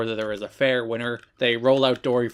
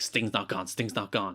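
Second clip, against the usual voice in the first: put-on paranoid scared voice, quieter; 2 semitones lower, 6 dB quieter than usual. Describing how a wrestler acts lately: imitating paranoid Eric Young. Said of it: "paranoid and he's, he's not confident and he's scared".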